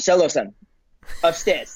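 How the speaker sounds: butchered mock Korean accent. Retelling what the grandmaster living with them said to him: imitating a korean accent. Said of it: "I'm probably butchering the accent".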